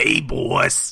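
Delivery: rough, creaky, rasping cartoon mutant voice. After admitting they can't do it, attempting a bad Rocksteady impression. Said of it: "That's bebop right there".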